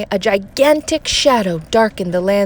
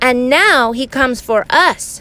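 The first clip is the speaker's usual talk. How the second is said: usual speaking voice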